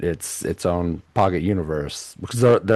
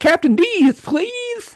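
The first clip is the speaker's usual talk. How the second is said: put-on very high, lisping child's blurted shout; 3 dB louder than usual. Recalling a nineties commercial, shouting like the Captain D's commercial kid. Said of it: "he would just shout in the middle".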